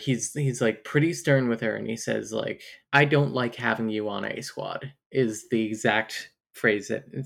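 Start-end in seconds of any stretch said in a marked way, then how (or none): none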